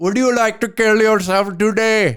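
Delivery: put-on Indian accent, call-centre agent style. Speaker acting out a phone call to a call center, Indian call center accent. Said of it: "I don't really want to do the accent".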